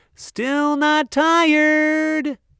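very high, long drawn-out, tired-sounding shout. Reading a story aloud, the narrator gives Lucy's line while out with her daddy, shouted. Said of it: "Lucy shouted moments later".

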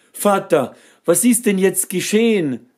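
very high, frantic shouted cry. A son, frozen with the others, calls to his father: shouting. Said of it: "schrie der Sohn".

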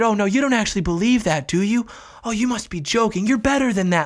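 put-on, very condescending, patronizing know-better voice. Commentator mimicking how the left talks to the right: mock-condescending tone. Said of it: "Like this very condescending tone".

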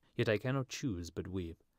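ordinary delivery

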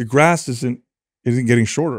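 ordinary delivery

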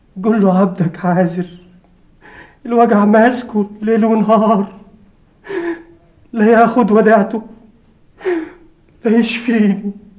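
begging through tears, crying and pleading. A man in pain begs the holy man to ask Christ for him, crying while pleading. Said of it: "ما تبكيش يا عازر".

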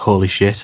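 muttering under breath. Voicing a character reacting to food slid through, muttering under her breath. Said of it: "under her breath".

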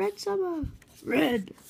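showy, high, dramatic anime character voice. Recapping a fight scene, trying the character's voice. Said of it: "I'm trying to do the voice".

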